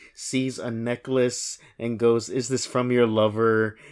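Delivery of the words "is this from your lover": normal talking voice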